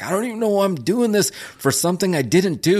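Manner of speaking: put-on very high, whiny, sulky teen voice. Retelling a wrestler's complaint about his scripted lines: imitating a sulky scolded teenager. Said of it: "He sounded like a teenage kid that was getting".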